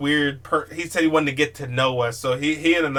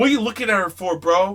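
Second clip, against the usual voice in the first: confrontational, half-yelled, pitched high; 6 semitones higher than usual. Retelling how a drunk friend yelled at a taxi driver: imitating someone yelling. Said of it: "he's just yelling at the driver".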